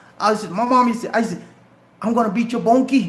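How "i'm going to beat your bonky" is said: put-on coastal Georgia Lowcountry accent. Showing how he used to talk: imitating his old Geechee accent. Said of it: "that was my accent".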